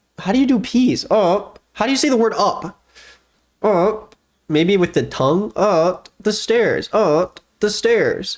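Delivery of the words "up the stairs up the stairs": slow, flat, mechanical robot voice. Practicing saying the word up, talking like a robot. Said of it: "Why am I talking like a robot?".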